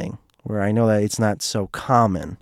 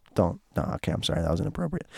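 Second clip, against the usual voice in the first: plain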